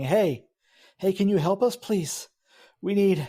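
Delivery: feeble, weak, high, failing voice. Game master voicing an unseen caller in the scene, weak voice. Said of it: "it's a weak voice saying".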